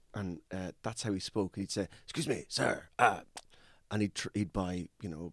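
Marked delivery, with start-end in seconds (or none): 2.0-2.8 put-on grunty voice, higher. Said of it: "speak in kind of, um, kind of grunts".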